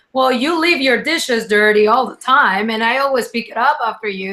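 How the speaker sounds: usual speaking voice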